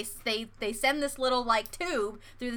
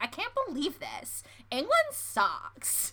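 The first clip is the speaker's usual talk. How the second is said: soft, sassy, put-on American accent; 5 semitones higher, 5 dB quieter than usual. Acting out an American tourist in England: sassy put-on American voice. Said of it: "give it a little bit of sass".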